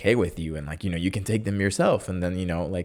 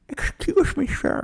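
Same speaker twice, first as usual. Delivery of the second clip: put-on elderly character voice; 3 dB louder than usual. Retelling an old person in a conservative town speaking up, put-on old person voice. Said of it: "this is my old person voice".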